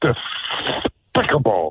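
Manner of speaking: old-cartoon style delivery of the word despicable. Showing listeners how to say a word: the way old cartoons said it. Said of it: "Say it the way they used to say in the cartoons".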